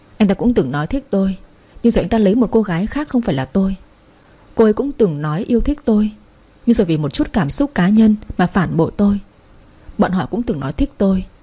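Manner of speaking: ordinary delivery, nothing marked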